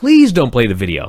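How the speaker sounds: earnest, outright pleading and begging. Retelling a wrestler asking the announcer: imitating pleading. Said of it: "And he's pleading".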